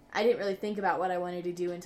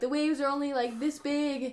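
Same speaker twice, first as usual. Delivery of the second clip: high yell carrying across a distance; 8 semitones higher than usual. From across the river, Emily points at the speaker, imitating Emily yelling. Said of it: "Emily's yelling at me like".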